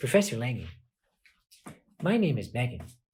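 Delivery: soft, mock haughty, stuck-up, snooty voice. A professor retells a student introducing herself after class, imitating Megan's snooty voice. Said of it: "she kind of had a snooty voice too".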